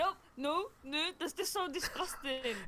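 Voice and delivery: play-acted, slow, affronted, offended, firm tone. Retelling how the other speaker refused a question: imitating an offended refusal. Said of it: "And you literally went".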